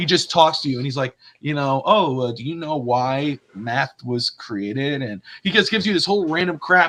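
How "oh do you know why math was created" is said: very slow, tedious, dull rambling. Retelling a show scene, imitating a boring energy vampire. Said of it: "He basically bores the hell out of you".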